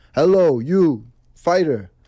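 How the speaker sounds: put-on loud, high-pitched Russian accent with broken English. Retelling calls from russia, imitating a russian caller's broken english. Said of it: "doesn't even know how to speak English".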